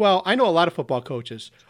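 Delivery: put-on cheeky, sassy know-it-all smart-aleck kid voice. Retelling what a young daughter said to a coach: imitating a smart-aleck child. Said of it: "little smart aleck".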